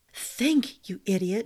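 whispered, voice cracking. A girl speaks to herself, whispered with her voice cracking. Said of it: "she whispered, and her voice cracked again".

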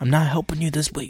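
put-on whisper. Retelling a classmate refusing to help in chemistry: imitating Tony whispering. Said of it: "He does when he whispers".

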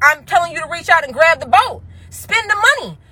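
high-pitched, mild half-yell. Speaking to listeners about their money mindset, yelling. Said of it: "I'm yelling".

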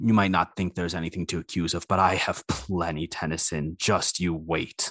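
low, menacing, through gritted resolve. Voicing Redmond, staring daggers while threatening Tennyson: Redmond speaking menacingly. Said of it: "Redmond is staring daggers and says".

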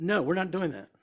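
put-on angry tone. Retelling refusing his wife's side trip on the drive home, retelling an angry tone. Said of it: "kind of an angry tone".

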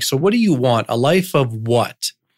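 ordinary delivery

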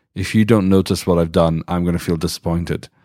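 usual speaking voice

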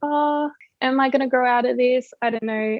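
ordinary talk

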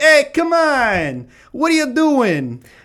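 put-on angry Italian-accented yell, very high and slow. Retelling Fernando Alonso confronting Petrov after the race: imitating angry Italian man. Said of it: "gives him the old Ferrari Italian angry man".

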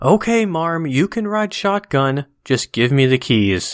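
acted yelling. Describing a picture, voicing the very angry woman in the driver's seat, retelling a woman's yell. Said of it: "And the woman is yelling".

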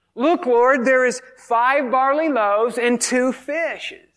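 faintly sarcastic, mocking, put-on tone. Retelling Andrew's words to Jesus about the loaves: Andrew, put-on sarcastic tone. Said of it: "I almost hear sarcasm in this".

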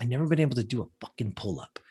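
put-on clenched-teeth speech. Quoting a woman who is pissed off at the speaker, imitating her through gritted teeth. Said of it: "she's like gritting her teeth at me".

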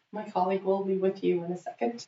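plain

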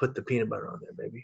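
quick, hushed whisper right into the ear. Retelling what a worker at a party whispered: imitating a whisper. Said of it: "he whispered in my ear".

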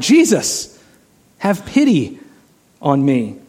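very slow, drawn-out calling cry. Telling of a man the crowd tried to silence, retelling a yell. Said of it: "he yells all the more".

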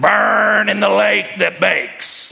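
high, rough, slow, fiery hellfire preaching. Retelling how a man who preached at them got fired up, imitating fired-up preaching. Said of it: "he'd get real fired up".

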